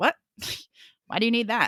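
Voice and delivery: mock dismissive, brushing-off, puzzled tone. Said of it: "people would just be like".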